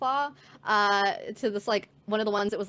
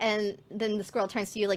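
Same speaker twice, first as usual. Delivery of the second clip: normal talking voice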